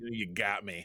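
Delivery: words forced out through clenched, gritted teeth. Retelling a scene, imitating Sisko through gritted teeth. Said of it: "Just kinda grit his teeth like".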